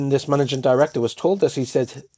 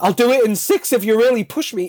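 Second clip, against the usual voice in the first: high, panicky, panicked voice; 8 semitones higher than usual. Retelling an applicant's hurried offer to work faster: imitating a panicked reply. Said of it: "this poor man panicked and went".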